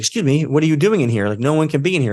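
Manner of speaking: put-on startled, caught-off-guard, demanding tone. Retelling a worker who turned around at an intruder: imitating a startled woman. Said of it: "she gets startled".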